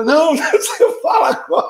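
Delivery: high, laughing taunt.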